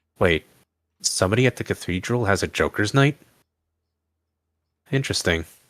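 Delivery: muttered, under-breath half-whisper. Playing a character overhearing others, half-whispering to himself, not to anyone. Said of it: "he would whisper".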